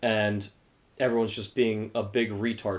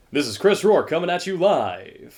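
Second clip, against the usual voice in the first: put-on loud, drawn-out radio announcer voice; 8 semitones higher, 7 dB louder than usual. Put on the spot to show a broadcaster voice: put-on radio broadcaster voice. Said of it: "What's your broadcaster voice though?".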